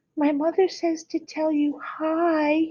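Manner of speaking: gentle, soft, sweet, high little voice. Narrator reading a friend passing on her mother's greeting, in a soft, sweet voice. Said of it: "in her soft, sweet voice".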